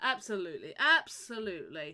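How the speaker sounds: loud, swooping, heavy dripping sarcasm. Voicing a character replying to the players: dripping with sarcasm. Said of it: "He's dripping with sarcasm as he says this".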